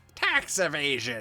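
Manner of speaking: cartoonish, spooky, bony skeleton voice. Video host reading memes aloud, in a skeleton voice. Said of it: "That's how skeletons talk".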